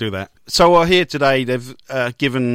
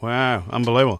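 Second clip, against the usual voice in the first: flat, unenthusiastic, unexcited delivery. Reacting to another speaker's story about a winning tip, unenthusiastic tone. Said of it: "You always sound so unenthusiastic".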